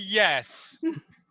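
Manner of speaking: strained, forced delivery through clenched, gritted teeth. Explaining an earlier answer to the others: imitating a yes through clenched teeth. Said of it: "say through clenched teeth".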